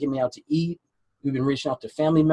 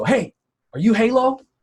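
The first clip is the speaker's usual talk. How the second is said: mock loud, high calling out; 8 semitones higher, 5 dB louder than usual. Retelling a tall guy calling out from behind him at the market, loud voice. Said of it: "I hear this like loud voice behind me go".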